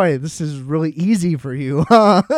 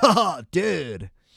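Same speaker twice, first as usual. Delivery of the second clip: put-on stoner voice, quieter; 4 dB quieter than usual. Mocking a new stoner character on a show: imitating a stoner character. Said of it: "They have a new character who's a stoner".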